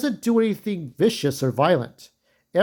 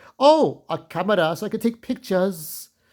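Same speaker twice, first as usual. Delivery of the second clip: bad fake French accent, slower; 2 semitones higher than usual. Quoting a man's young girlfriend, in a bad french accent. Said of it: "I can't even do a French accent".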